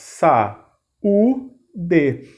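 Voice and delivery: saúde said slowly, split into three beats sa-u-de. Pronouncing a word slowly to show its three syllables: saúde slow, syllable by syllable. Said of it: "Se a gente pronunciar devagar".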